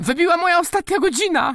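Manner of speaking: very high, loud, squeaky cry. The duck cries out before dropping flat and covering its head, squeaking. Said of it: "Piszczy kaczka".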